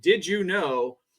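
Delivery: imitated deadpan, flat computer narrator voice. Describing a YouTube clip, imitating its deadpan AI voice. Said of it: "very uh, deadpan A I voice saying".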